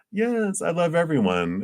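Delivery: high, eager gushing voice with wide pitch swings.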